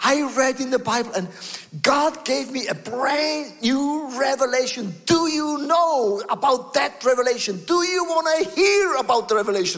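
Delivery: mock eager, fired-up, bursting-with-excitement enthusiasm. Retelling his wife's morning news: imitating wife excited. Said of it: "You are so on fire".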